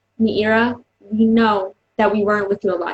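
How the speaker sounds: normal talking voice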